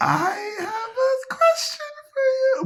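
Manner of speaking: very high, slow cartoon villain voice.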